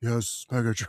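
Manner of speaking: put-on tired voice. Imitating Soundwave answering Megatron: tired-sounding Soundwave voice. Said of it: "the most tired sounding".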